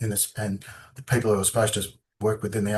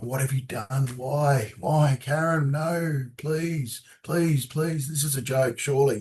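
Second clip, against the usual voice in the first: acted howling while crying, higher; 5 semitones higher than usual. Retelling finding Karen and pleading with her: retelling crying and yelling. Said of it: "I just started crying. I just started yelling. I just started howling".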